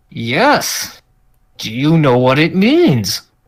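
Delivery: words forced through gritted, clenched teeth. Confronting someone about a shirt prank, through gritted teeth. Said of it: "Gritted teeth".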